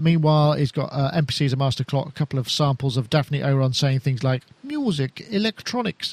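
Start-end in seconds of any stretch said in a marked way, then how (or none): 4.6-6.1 put-on posh, old-fashioned voice, slightly high pitched. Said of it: "in a posh 50s voice. That was my attempt".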